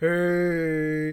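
put-on gloomy cartoon voice. Mimicking how Arthur's intestine talks, Eeyore voice on hey. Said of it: "he talks like Eeyore".

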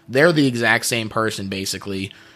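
usual speaking voice

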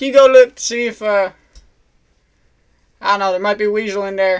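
very loud, shifting, inconsistent put-on Australian accent. Caller on the phone to the computer guy, in a put-on australian accent. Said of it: "Is he really talking in an Australian? The computer guy's talking in an Australian accent? ... If you noticed in that, while I was talking to him, I changed my accent like 6 times".

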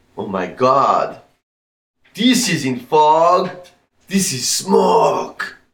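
animated cartoon crab character voice. Retelling what he said on pulling off the freeway; Disney crab voice. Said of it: "why do you make him sound like a Disney crab?".

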